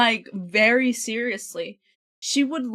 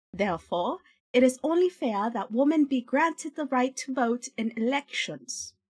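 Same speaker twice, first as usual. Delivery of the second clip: bad put-on British accent. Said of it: "my British is so bad".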